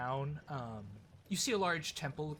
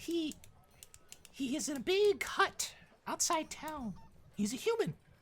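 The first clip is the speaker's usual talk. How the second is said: very high, slow, drawn-out halfling character voice; 14 semitones higher than usual. Voicing a halfling who tells a traveler where someone is: halfling character voice. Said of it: "I hate my halfling voice".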